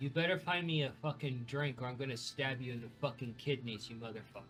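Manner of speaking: bone-dry, affectless, flat, expressionless monotone. Voicing a character who turns to a player, deadpan. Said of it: "She just deadpan turns towards you and she's like".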